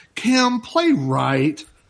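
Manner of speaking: angry, fed-up voice. Retelling how Davey got really mad: imitating Davey's angry voice. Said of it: "Davey gets really mad and he goes".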